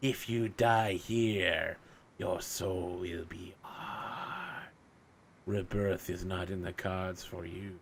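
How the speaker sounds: slow, drawn-out skeletal creature voice. Voicing a skeletal psychopomp who warns a mortal: voicing a skeletal psychopomp. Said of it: "He's like".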